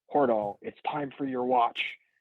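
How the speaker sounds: very loud voice, almost yelling. Retelling how he would wake Hordal for watch: retelling an almost-yell. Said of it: "basically almost yelling like".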